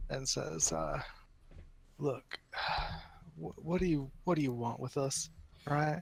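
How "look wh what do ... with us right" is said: exasperated, with an audible sigh. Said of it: "at this point is exasperated and just kinda sighs".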